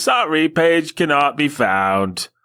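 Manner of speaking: odd put-on British accent. Quoting a missing web page's message to listeners, weird British voice. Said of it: "I suppose it's going into a British thing".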